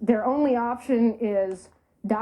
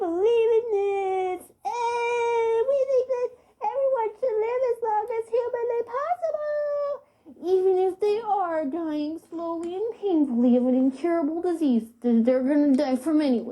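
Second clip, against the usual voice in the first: put-on very high, swooping baby voice, And drawn out; 11 semitones higher than usual. Mocking how certain people sound when stating their beliefs, in a ridiculous baby Eric Cartman voice. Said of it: "talk in a ridiculous, like, baby".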